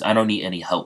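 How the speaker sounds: plain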